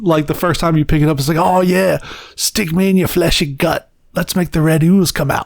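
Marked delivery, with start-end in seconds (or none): 1.4-5.5 put-on Australian accent with homicidal, hungry relish. Quoting the game's homicidal knife when first picked up: Knifey voice with Australian accent. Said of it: "it's an Australian guy voicing it".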